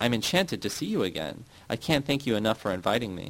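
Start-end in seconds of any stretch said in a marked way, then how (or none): none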